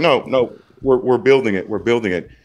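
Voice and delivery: ordinary delivery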